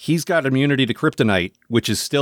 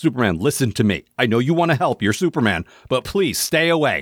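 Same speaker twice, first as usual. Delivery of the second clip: very strong, forceful, insistent, emphatic delivery. Recapping a show, the speaker retells a character's warning, acting it out forcefully. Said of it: "he says it very strongly".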